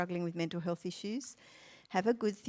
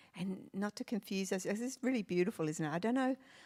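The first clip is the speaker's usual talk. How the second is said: ordinary talk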